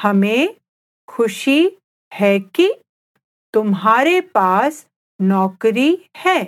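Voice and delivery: slow, careful, deliberate, drawn-out teaching pace. Repeating a hindi sentence for the listener: said slowly. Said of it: "I'll say it again slowly".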